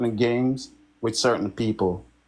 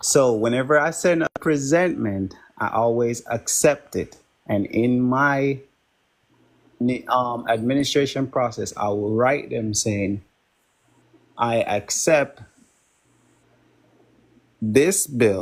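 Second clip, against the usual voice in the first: careful, slow, deliberate, unhurried delivery. Going over his explanation again for the group, speaking slowly. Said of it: "I'm gonna go over it slowly again".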